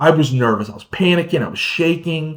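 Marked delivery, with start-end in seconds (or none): none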